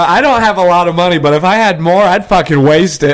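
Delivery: plain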